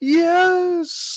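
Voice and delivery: shouting from a distance. Voicing a character calling down from a balcony after a fight: Catherine yelling. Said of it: "Catherine from the balcony yell and go".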